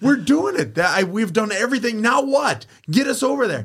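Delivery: put-on very high screaming. Retelling being stopped at a rope, the speaker reenacts screaming at a lady. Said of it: "and just end up screaming".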